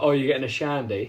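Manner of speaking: put-on Manchester accent. Telling a story about a man from manchester at a bar, manchester accent. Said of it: "in his Manc voice".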